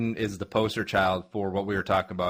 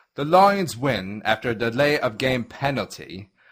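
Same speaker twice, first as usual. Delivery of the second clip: terrible put-on British accent; 4 semitones higher, 6 dB louder than usual. Starting a segment that must be done entirely in British accents, bad British accent. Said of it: "We have to do this entire next segment in British accents".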